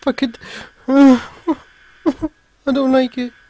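genuinely frightened outburst. Player reacting while playing a game, scared. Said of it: "I've never been this scared on a game in my whole life".

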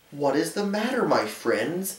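kind, caring tone. Reading a children's story, the little blue engine stops for the toys: kindly. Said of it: "she asked kindly".

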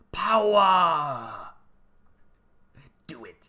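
menacing, loud villain voice, first word stretched out. Breaking into an impersonation before going on to Oregon earthquakes, a Dark Lord of the Sith impersonation. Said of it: "that was the Dark Lord impersonation of the Sith".

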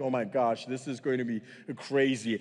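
put-on alarmed, on-edge, panicked freaking-out outburst. Retelling a skydive climb to fifteen thousand feet: imitating himself freaking out. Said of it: "he can tell I'm freaking out".

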